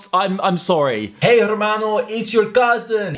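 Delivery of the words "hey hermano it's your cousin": put-on, best-effort Mexican accent. Pretending to phone as someone's cousin: put-on mexican accent. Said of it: "I then tried to do my best impression of a Mexican accent".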